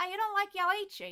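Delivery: put-on heavy Australian accent laid on. Retelling a question asked by a man at breakfast: thick Australian accent. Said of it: "he's got this thick Australian accent".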